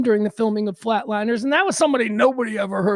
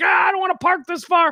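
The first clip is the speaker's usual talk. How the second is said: mock fed-up, exasperated, pitched-up frustrated grumble; 8 semitones higher than usual. Retelling hunting for a parking spot in chicago: acting out own frustration. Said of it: "So I'm getting a little frustrated".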